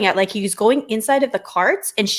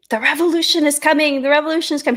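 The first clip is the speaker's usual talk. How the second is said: put-on man's yell, pitched higher; 5 semitones higher than usual. Retelling hearing a man in the street: imitating a man yelling. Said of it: "I hear a man yelling".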